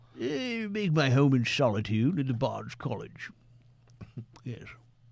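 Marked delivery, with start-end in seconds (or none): 0.2-3.3 put-on old, bookish, elderly gentleman librarian voice. Answering another player in character, as an elderly gentleman librarian. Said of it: "an elderly gentleman who's librarian".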